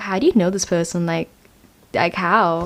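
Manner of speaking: usual speaking voice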